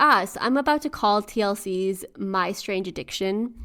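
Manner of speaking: ordinary delivery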